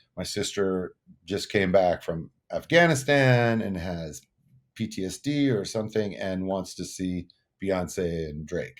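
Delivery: ordinary talk, nothing marked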